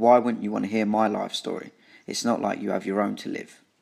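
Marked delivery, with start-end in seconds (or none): none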